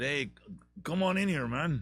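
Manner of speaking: horrible put-on Mexican accent. Voicing the tequila inviting the potato in, in a horrible mexican accent. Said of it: "that's my horrible Mexican accent".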